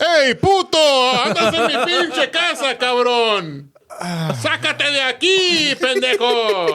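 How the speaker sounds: very high, shrill, swooping angry monkey voice. Voicing a howler monkey cursing visitors in Spanish: angry monkey voice. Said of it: "they said it in Spanish".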